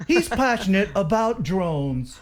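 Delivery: stilted newscaster cadence. Mocking how news people talk, imitating news reporter cadence. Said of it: "talk like this in a cadence".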